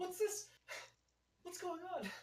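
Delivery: very high-pitched, baffled, bewildered tone. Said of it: "I'm going all in on this performance".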